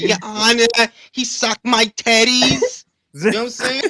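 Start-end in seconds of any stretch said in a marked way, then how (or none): 0.0-2.8 bad put-on Italian accent, very drawn out. Joking about a court case, doing a bad My Cousin Vinny Italian accent. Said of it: "like my cousin Vinny, I'm gonna have a bad Italian or Greek joint".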